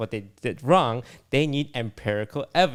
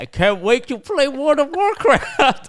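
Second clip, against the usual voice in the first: very high voice, talking through mouthful of food; 4 dB louder than usual. Speaker telling Yvonne about sponsors, imitating Yvonne talking with her mouth full. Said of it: "with your mouth full of chips saying".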